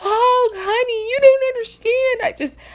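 play-acted very high, tearful, beside-herself crying wail. Mocking women who cry on TV, the speaker imitates them, mock-crying like TV women. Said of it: "seeing these women just cry and be beside themselves".

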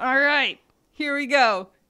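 loud, high-pitched put-on sports announcer voice. Kicking off the segment in a Monday Night Football voice. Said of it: "That's my week, week two Monday Night Football voice".

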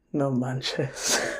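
muttered whisper under the breath. Retelling a woman's reaction to hearing his heart is too big: retelling a whisper under her breath. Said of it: "she whispers under her breath".

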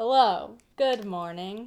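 robotic, mechanical, monotone, by-rote delivery. A co-host mimics how their show's opening greeting sounds, in a mechanical-sounding greeting. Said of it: "it sounds so mechanical".

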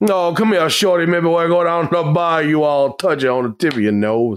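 talking with a Cajun accent. On a podcast, the speaker breaks into an emergency bit: cajun accent. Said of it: "my emergency shoot was to do a fucking Cajun accent".

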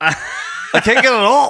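broad Newfoundland drawl, very high, very slow. Imitating the other speaker choking on a chip: thick newfoundland accent. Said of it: "like you had the thickest Newfoundland accent".

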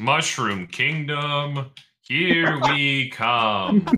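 flat, slow, passionless, unenthusiastic delivery, no effort. Mocking an actor's line delivery: unenthusiastic Chris Pratt voice. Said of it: "that just lacks passion".

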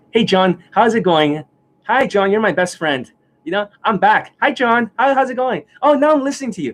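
high, fawning, eager-to-please friendly voice. Speaker mimics people coming back to him after getting burnt, imitating a fawning smile. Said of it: "you'll be like smiling at me like this".

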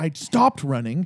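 ordinary delivery

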